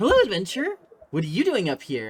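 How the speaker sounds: loud, quick, darting, swooping pixie voice. A game narrator voices a pixie greeting an adventurer from behind, in pixie voice. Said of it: "and you see a pixie".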